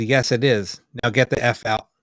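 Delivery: normal talking voice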